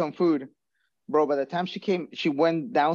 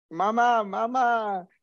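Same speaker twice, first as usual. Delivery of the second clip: high, stretched-out, drawn-out yelling; 6 semitones higher than usual. Sick, retelling calling to a mother who doesn't hear: retelling yelling for mama. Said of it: "I'm yelling at her".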